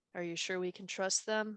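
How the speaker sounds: hesitant, wary, reluctant, distrustful doubt. Voicing a twin girl who looks the others up and down: reluctant, wary. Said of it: "a little bit more reluctant than the other two".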